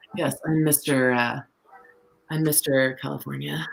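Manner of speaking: put-on smug self-important voice. Imitating Robert California introducing himself, full of himself. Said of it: "He's just so, like, full of himself".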